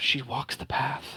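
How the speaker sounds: whispering under breath. Voicing two people whispering as a player character leaves: whispering under breath. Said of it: "very much under their breath whisper".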